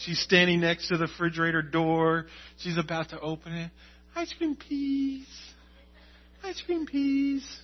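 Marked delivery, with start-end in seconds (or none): 4.1-7.4 put-on elegant, soft, high, sweet little-girl voice. Acting out Charlie asking for ice cream, the speaker imitates Charlie's sweet high voice. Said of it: "elegant voice that she'll use".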